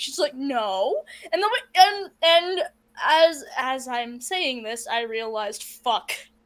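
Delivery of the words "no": put-on acted-out defiant, stubborn five-year-old little-kid voice. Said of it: "sounded like the five-year-old that I babysit".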